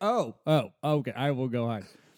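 ordinary talk, nothing marked

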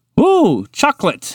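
eager, excited, very high-pitched voice. Montgomery the Moose, standing amid the destruction before munching off the floor, excited. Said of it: "Montgomery the Moose said excitedly".

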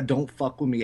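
ordinary delivery

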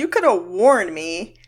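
ordinary delivery

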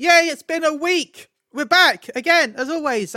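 enthusiastic, upbeat, excited, loud, drawn-out cheer. A podcast host welcomes listeners back for another week, excited. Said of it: "I don't know why I sound so excited".

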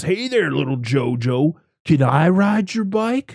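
exaggerated, mocking, taunting biker voice, word drawn out. Retelling a movie scene where a biker taunts a clown: imitating a biker. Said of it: "he comes up to him and goes".

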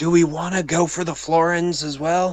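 hushed whisper. Asking the group in character whether to take the florins: whispering. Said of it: "Gonna whisper to people".

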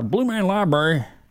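stretched-out Southern drawl. Repeating an old library's name in a drawled Southern accent. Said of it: "I say that with a southern drawl".

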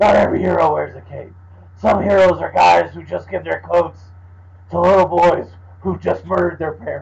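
rough, gravelly, creaky, growling superhero voice. Arguing the voice only suits short lines, the speaker quotes a longer one in the Batman voice. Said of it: "the Batman voice".

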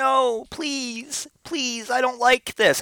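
put-on very high, little pleading child voice. Voicing a cat being bathed as if it were a child; imitating a pleading child. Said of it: "it started off as like a child being like".

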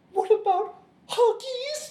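very high, full puppet diva pig voice. Retelling Piggy confronting Kermit, Miss Piggy impression. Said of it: "That's a very good impression".

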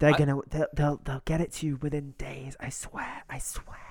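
mock conspiratorial, secretive whispering. Mocking the ad clip's speaker: imitating a conspiratorial whisper. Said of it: "he sounds like he's whispering as if he doesn't want people to hear it".

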